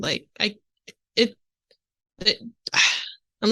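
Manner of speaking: stuttering, halting, broken up like a skipping record.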